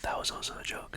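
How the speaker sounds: very quiet, hushed, barely voiced whisper. Joking aside to viewers while talking about MLM recruiting; whispering.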